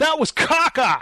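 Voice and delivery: high, sudden, blurted, half-yelled outburst. Retelling how a guy yelled at the screen after a movie: imitating someone yelling at the screen. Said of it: "a guy kinda yelled at the screen".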